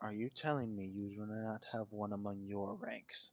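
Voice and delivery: grave, very stern, dead serious in-character tone. Voicing a character who looks dead serious at Cordovan: very stern tone. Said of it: "in a very stern tone".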